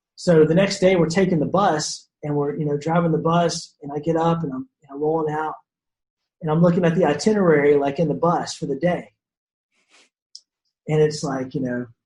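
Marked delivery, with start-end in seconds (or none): none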